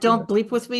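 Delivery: normal talking voice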